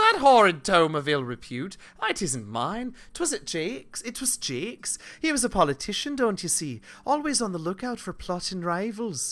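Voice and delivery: put-on Irish brogue, pitched high. Answering the other speaker, who found a book about planning the perfect murder: Irish accent. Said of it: "I'm still very Irish".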